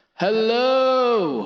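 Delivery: very loud, shrill, high megaphone blare. Showing off voice effects, one that sounds like a megaphone. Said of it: "which is like a megaphone".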